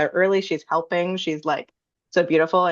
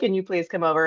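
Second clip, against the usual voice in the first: tearful, freaked-out pleading through sobs. Retelling calling a friend after breaking an ankle: retelling own sobbing plea. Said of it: "freaking out, sobbing".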